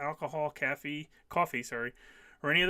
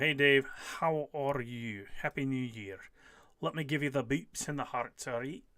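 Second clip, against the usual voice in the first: put-on Scottish accent. Greeting a commenter and wishing a Happy New Year: put-on Scottish accent. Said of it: "I've suddenly moved into a Scottish accent".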